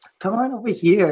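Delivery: put-on teenager voice. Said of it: "like a teenager".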